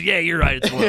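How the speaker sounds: put-on drunk voice. Retelling how Luke agrees when really drunk: imitating Luke drunk. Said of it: "Luke does something when he's really fucked up".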